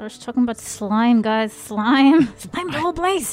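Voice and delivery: loud, forced out through clenched, gritted teeth. Their character speaking to the guys: through clenched teeth. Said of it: "Between clenched teeth, I say".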